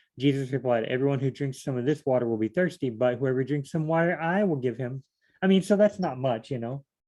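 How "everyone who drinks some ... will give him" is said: normal talking voice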